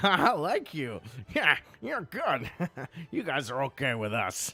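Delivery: cheerful, jovial goblin voice, high and swooping. Voicing goblins who laugh and joke with the players: jovial goblin banter. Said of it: "carry on with this jovial banter".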